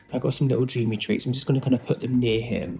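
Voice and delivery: careful, restrained, toned-down low-key voice. Setting treats near Adam, not wanting to scare him, talking quietly. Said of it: "I'm talking quietly because I don't want to scare".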